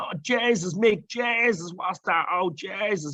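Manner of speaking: put-on high, slow, drawn-out Dublin accent. Retelling how three Dublin lads reacted to what they saw, imitating a Dublin accent. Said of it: "that's all you can hear the Dublin accent".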